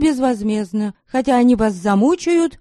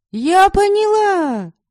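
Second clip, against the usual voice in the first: very high, triumphant, victorious cry; 10 semitones higher than usual. A woman answers a strange man who speaks in vague hints: triumphantly exclaiming. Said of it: "торжествующе воскликнула я".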